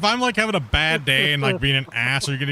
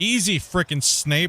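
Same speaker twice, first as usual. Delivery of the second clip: usual speaking voice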